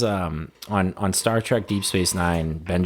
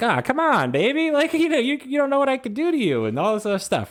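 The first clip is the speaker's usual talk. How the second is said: high, swooping, laid-on-thick flirtatious voice. Retelling a show scene where an amoeba character hits on a doctor: imitating Norm Macdonald's voice. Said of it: "Norm Macdonald's, like, doing the voice".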